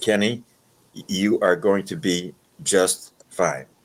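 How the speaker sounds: dropped into a deep register. Retelling a voice heard while praying beside the bunk: imitating a deep voice. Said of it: "I heard a deep voice".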